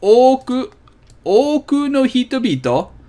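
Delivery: unhurried, syllable-clear speech. Demonstrating a Japanese phrase so listeners can hear it, said slowly. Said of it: "We'll say it slowly so you can hear it".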